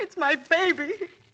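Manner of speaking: tearful. Answering a secretary who asks what is wrong: crying. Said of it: "please don't cry".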